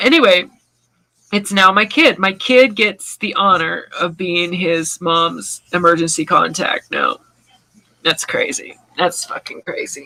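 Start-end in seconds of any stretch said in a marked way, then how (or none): 1.3-10.1 tearful voice, crying through the words. Saying who the emergency contact used to be, crying while talking. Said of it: "that just got me crying".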